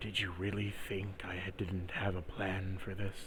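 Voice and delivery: very quiet, hushed stage whisper, close and intimate. Voicing a character who holds a player close, half-whispering in someone's ear. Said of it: "he whispers to you in your ear".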